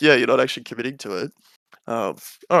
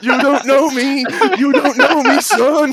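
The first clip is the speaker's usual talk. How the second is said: put-on yelling coach voice, higher and louder; 13 semitones higher, 7 dB louder than usual. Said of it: "just yell that".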